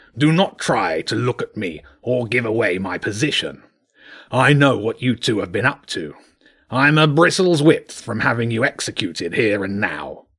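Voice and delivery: rough, gravelly voice. Reading a story aloud, voicing the king hidden under the fort, gruff.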